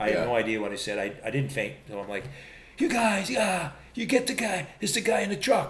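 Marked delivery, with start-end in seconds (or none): 2.8-5.7 play-acted, high-pitched screaming yell. Retelling a past moment, the speaker re-enacts his own screaming. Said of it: "I'm doing my screaming".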